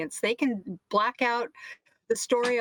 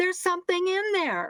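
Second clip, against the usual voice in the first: put-on, pitched-up screaming shout; 8 semitones higher than usual. Retelling a reaction to cable news: imitating screaming at the tv. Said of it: "I'm screaming at the T V".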